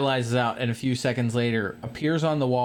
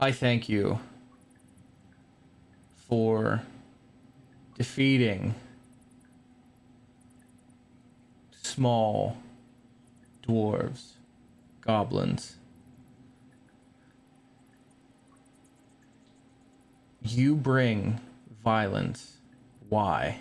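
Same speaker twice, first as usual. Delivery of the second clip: angry, otherworldly creature voice; 2 semitones lower than usual. Game master voices the Myconid Sovereign speaking into the players' heads, angry Myconid Sovereign voice. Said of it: "you can hear the anger in this creature's voice".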